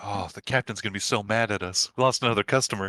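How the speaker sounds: low mumbled speech. Narrator voices characters overheard as they run off, mumbling. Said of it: "you just hear them mumbling like".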